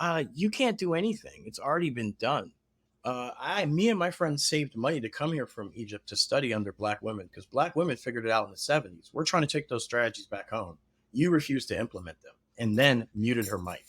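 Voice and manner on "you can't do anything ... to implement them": play-acted composed, even-keeled, very calm, measured delivery. Recounting a woman from egypt unmuting to answer on a call, retelling a very calm reply. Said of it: "she very calmly says".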